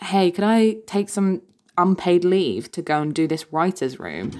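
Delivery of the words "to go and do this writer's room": ordinary talk, nothing marked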